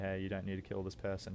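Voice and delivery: ordinary talk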